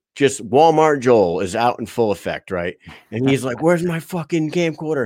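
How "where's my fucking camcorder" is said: acted angry, menacing, threatening tone, pitched up. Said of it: "He starts threatening everybody".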